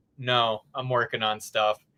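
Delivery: put-on flat deadpan delivery. Retelling a friend's blunt refusal to ride together: imitating Zay's deadpan reply. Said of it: "looks at me dead face and goes".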